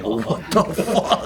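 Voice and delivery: slow, shocked, laughing disbelief.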